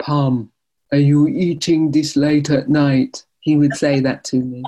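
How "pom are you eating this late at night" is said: put-on Jamaican-accented English. Retelling being caught by dad making a midnight snack, imitating dad's jamaican accent. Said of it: "in his Jamaican accents would say".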